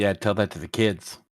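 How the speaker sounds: soft, muttered half-whisper under the breath. Voicing a character muttering a retort at another player: half-whispering under breath. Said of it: "I whispered in my breath".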